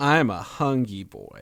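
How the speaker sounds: suggestive, sexual-sounding delivery. Saying a line right after returning to the show: sexual-sounding delivery. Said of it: "it's less sexual than what I did".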